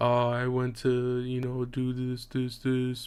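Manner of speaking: flat, dull tone of voice. Reacting to an old recording, showing the dull tone of voice. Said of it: "catch myself being more dull in the tone of voice".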